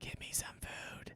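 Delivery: very quiet, hushed whisper close to the ear. Narrating a scene where a shy character speaks to you, whispering in your ear. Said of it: "you hear a whisper in your ear".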